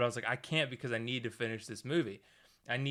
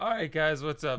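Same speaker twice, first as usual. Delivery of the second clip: loud, breaking, cracking voice; 4 semitones higher, 5 dB louder than usual. Greeting viewers at the start of a video, voice cracking. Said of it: "my voice is cracking there".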